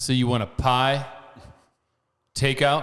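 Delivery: put-on sarcastic tone. Retelling how pizza staff correct an order: imitating sarcastic pizza staff. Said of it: "they sarcastically have to".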